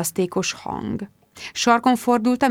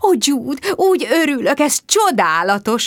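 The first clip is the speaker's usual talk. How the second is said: effusive, fawning, high, gushing delight; 5 semitones higher, 3 dB louder than usual. Throwing herself at two newcomers at a garden party, a woman greets them, gushing. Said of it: "áradozott".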